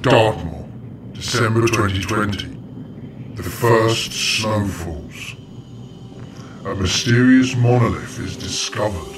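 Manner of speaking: put-on mysterious voice. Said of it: "(Mysterious Voice)".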